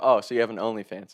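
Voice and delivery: ordinary delivery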